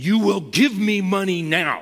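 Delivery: put-on, high-pitched, furious enraged screaming. Recounting a man who became enraged and screamed at him, retelling an enraged scream. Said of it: "became enraged and started screaming at me".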